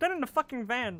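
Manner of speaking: bad put-on frog puppet voice. Retelling a dream of being kidnapped at gunpoint, Kermit the Frog voice. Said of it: "like doing like the Kermit voice".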